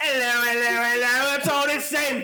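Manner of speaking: put-on English accent. Greeting the others on return from England: put-on English accent. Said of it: "What is this accent?".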